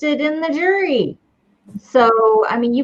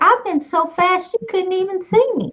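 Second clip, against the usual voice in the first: creepy, high insect voice. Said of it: "this is a really creepy voice".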